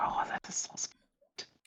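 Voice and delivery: soft, hushed, awed library-quiet whisper. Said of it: "I was like".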